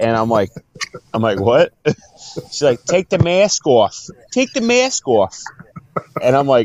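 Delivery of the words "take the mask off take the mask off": put-on Boston accent, sing-song, high and swooping. Retelling what a bartender from Boston told the speaker, in a Boston accent. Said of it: "Do the Boston accent now".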